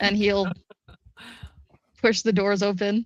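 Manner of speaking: normal talking voice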